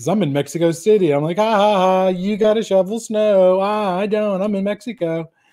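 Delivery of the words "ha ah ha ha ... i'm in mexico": high, mock smug, gloating jeer with laughs. Retelling laughing at everybody back home from Mexico City, mock laughing at everybody. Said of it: "I was laughing at everybody".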